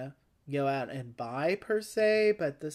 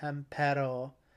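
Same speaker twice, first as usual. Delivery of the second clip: Pampero with stress on the second-to-last syllable -pe-. Guessing spanish stress on a name near the penultimate: stress on pam-pe-ro. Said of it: "it comes toward the penultimate".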